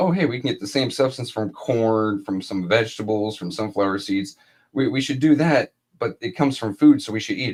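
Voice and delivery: ordinary talk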